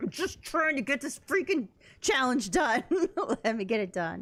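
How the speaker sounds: put-on pissed-off gripe. Retelling a frustrated moment stuck on a game challenge: imitating own pissed-off complaint. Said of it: "I just get so pissed off".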